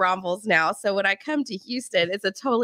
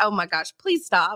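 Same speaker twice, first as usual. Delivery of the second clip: put-on panicked voice. Retelling being cut off while trying to exit: imitating own panic. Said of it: "I'm, like, panicking".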